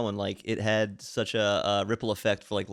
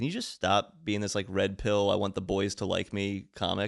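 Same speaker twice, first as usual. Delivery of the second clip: plain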